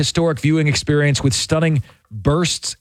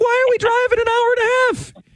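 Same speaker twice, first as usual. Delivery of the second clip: whiny, whining tone, voice going very high. Showing a co-speaker how their voice goes up when complaining, high-pitched whining. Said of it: "how my voice goes high when I start whining".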